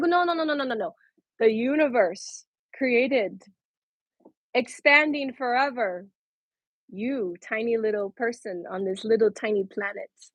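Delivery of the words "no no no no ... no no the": plain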